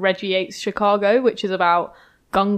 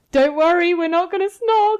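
acted, raised, pitched-up shout; 10 semitones higher, 4 dB louder than usual. Retelling what a man shouted to the PR while leaving the room: retelling a shout. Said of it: "he shouted to the PR".

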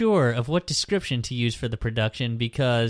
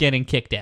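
normal talking voice

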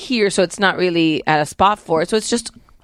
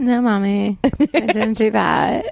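put-on fibbing child voice. Showing the other speaker how their voice for her sounds, imitating Sophia lying. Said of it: "It's like this".

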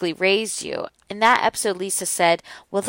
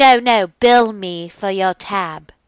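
put-on drawn-out, very slow English accent; 4 dB louder than usual. Retelling what she said, in a put-on English accent. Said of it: "That was my English accent".

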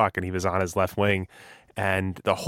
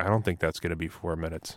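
mock deadpan, much lower pitch and quieter; 2 semitones lower, 6 dB quieter than usual. Retelling a TV booth analyst's reply to a player faking a cut, imitating Mike Milbury's deadpan. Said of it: "Mike Milbury completely deadpans".

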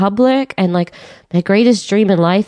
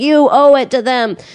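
mock screaming at the top of the lungs; 5 semitones higher than usual. Retelling what a rabbi screamed at the parents, retelling a scream. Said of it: "screaming at them at the top of his lungs".

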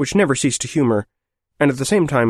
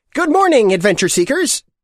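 put-on shrill, very high childlike voice; 12 semitones higher, 4 dB louder than usual. Narrating, voice the guide's first words to the group in a shrill childlike voice. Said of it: "he said in a shrill, childlike voice".

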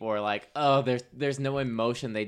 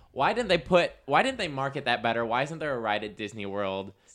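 ordinary talk, nothing marked

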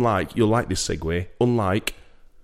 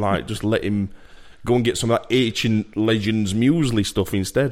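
ordinary talk

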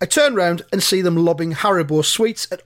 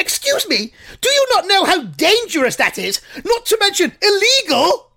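very high screech, swooping up and down. Reading out a story, you voice the narrator confronting a man: screeched Lampard voice. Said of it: "In a totally fluke Lampard voice, I screeched".

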